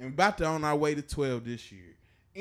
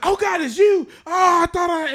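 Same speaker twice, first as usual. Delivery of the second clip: put-on panicked voice, higher and louder; 11 dB louder than usual. Retelling a friend's panicked reaction when the call came back: imitating someone panicking. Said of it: "he's like panicking".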